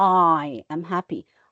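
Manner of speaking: heavy emphasis on the word I. Showing that i am the one who is happy, not you: stress on i. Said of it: "I want to stress something... I am the one who is happy, not you".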